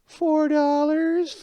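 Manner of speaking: put-on sad voice. Retelling an argument about money, the speaker imitates her answer in a sad voice. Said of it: "like in a qui- in a sad voice".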